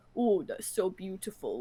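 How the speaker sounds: very deep, slow put-on man's voice. Imitating a man with an incredibly deep voice, put-on very deep voice. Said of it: "he had an incredibly deep voice ... I can't go that deep".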